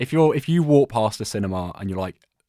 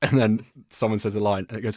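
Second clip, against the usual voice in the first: plain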